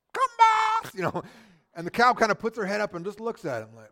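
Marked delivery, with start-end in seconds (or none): 0.1-0.9 put-on loud, very high, squeaky little kid voice. Retelling small kids calling cows from a car window: squeaky little three-year-old voice. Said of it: "those squeaky little three-year-old voice".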